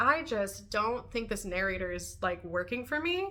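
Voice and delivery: ordinary talk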